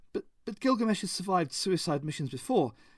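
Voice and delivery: meek, hesitant, stumbling, nervous, slightly high voice. Narrator reading a nervous man's reply about gilgamesh, timid. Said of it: "he said timidly".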